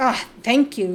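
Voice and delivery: sarcastic, loud delivery.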